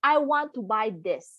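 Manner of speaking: ordinary talk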